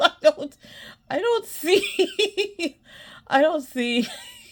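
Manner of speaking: words broken up by laughing, high and swooping. Scrolling through an old list and reacting: laughing while talking. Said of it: "I'm sorry, I'm laughing".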